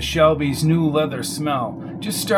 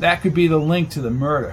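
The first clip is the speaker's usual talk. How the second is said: ordinary delivery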